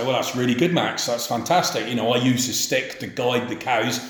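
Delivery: ordinary delivery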